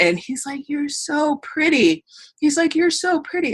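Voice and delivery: high-pitched voice, choked up with emotion. Telling about meeting a little boy dressed as Batman, choked up. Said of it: "Oh, I'm getting emotional".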